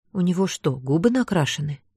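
plain reading voice

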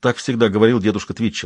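plain

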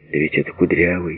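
ordinary delivery

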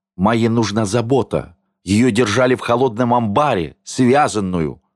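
plain reading voice

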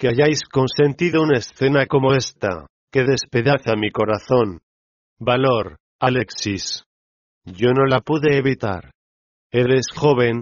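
ordinary delivery

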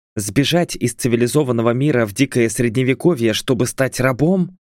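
ordinary delivery

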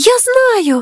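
high, sudden exclamation, cutting right in. Kapule breaks in while the shell is explaining: exclaimed. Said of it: "вигукнув Капулє".

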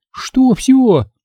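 very high, terrified little squeak. Reading a story, a girl reacts to the doctor's verdict with a fearful squeak. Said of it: "испуганно пискнула Светка".

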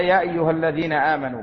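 usual speaking voice

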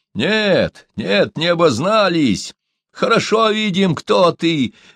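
thin, shrill, screeching high-pitched yell. A narrator reads a lanky man answering the old man before throwing a stone, shrill yell. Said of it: "заорал долговязый тонко".

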